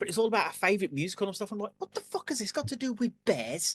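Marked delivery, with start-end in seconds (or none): 1.8-3.8 put-on Liverpool Scouse accent, pitched up. Retelling own words at a job interview: slipping into a Scouse accent. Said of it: "you did go Scouser".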